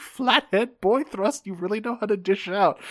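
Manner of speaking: play-acted, high, giggly private snicker. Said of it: "he's fucking laughing to himself".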